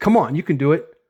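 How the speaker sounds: ordinary talk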